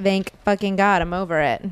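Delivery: ordinary talk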